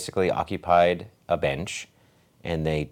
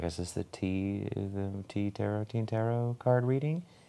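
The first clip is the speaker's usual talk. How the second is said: mock-nervous delivery, much quieter; 3 semitones higher, 9 dB quieter than usual. Retelling approaching a table and asking a question, retelling a nervous question. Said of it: "I like nervously asked".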